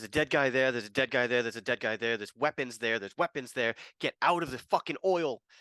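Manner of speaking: loud called-out lines, repeated, pitched high. Playing a character in a game scene, yelling commands; shouting instructions. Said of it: "I'm just gonna be kind of shouting random instructions".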